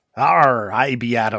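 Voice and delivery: put-on pirate voice. Podcast host introduces themself at the start of an episode: pirate voice. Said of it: "how long will we be doing these pirate voices today?".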